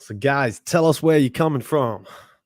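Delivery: bad, loud, fake American accent. A host speaks to the guys listening, in a bad american accent. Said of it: "That was my worst American accent".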